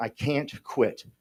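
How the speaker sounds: acted-out crying voice. Retelling crying into a mirror, desperate to quit drinking: imitating own past crying. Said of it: "I was crying into a mirror saying".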